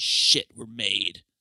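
muttering under the breath. Speaker retells what they said under their breath while on the move, retelling an under-breath mutter. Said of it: "I say under my breath".

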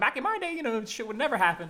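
put-on grumpy old-man voice.

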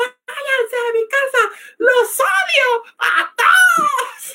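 hysterical crying, very high, slow and drawn out. Retelling the birthday girl's words as she cried: imitating hysterical crying. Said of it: "estaba llorando histérica".

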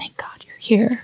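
soft, hushed whisper, barely voiced. Playing a character who hugs an arriving friend: whispering.

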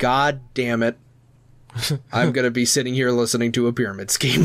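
ordinary talk, nothing marked

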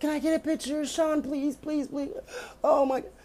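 put-on, very high, weepy, tearful pleading tone. Speaker retelling someone crying for a picture with Sean, imitating crying begging. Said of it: "Crying like".

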